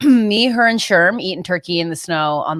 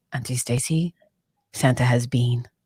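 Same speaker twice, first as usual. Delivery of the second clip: put-on creepy, spooky kid voice; 6 semitones lower, 6 dB quieter than usual. Retelling a nephew waking her on Christmas morning: imitating nephew, creepy like The Shining. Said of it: "Get outta here, The Shining".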